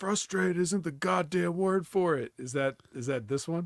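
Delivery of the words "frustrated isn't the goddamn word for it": furious, pitched-up angry yell. Recalling a TV episode where Brett yelled at Vince McMahon, retelling Brett's yell. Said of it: "Brett yelled at Vince McMahon on T V".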